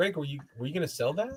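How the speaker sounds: soft friendly voice. Retelling how Eric Miller asked about a figure: imitating Eric Miller's nice voice. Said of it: "Eric Miller's just nice voice".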